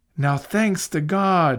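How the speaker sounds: glad, joyful exclamation, cried out. Robin comes home to find food on the table and cries joyfully. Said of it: "she cried joyfully".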